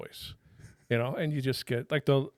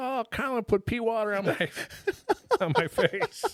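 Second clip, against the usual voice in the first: put-on high, slow, sobbing child's crying voice; 10 semitones higher than usual. Retelling a young son complaining after a bidet squirted him: imitating a crying child. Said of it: "he's crying".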